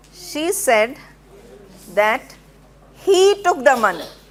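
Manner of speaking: heavy emphasis on he. Emphasizing he, not anybody else, in an example: stress on he. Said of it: "I am emphasizing on he, not anybody else".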